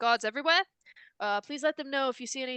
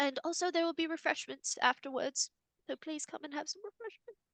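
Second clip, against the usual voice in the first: put-on soft, high, very old elderly woman's voice; 5 semitones higher, 5 dB quieter than usual. Narrating a scene, the speaker voices the woman at the podium in a very old lady voice. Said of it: "Very old lady".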